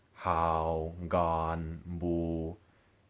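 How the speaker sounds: hao, gan, bu held flat and low. Contrasting the number 3 tones with the middle tones, say it with low level pitch. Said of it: "my voice had to go lower".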